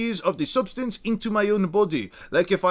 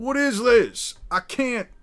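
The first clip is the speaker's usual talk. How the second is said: put-on American cowboy accent; 2 semitones higher than usual. Trying out different accents on the spot: cowboy accent. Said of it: "I can do more or less a, a a cowboy accent".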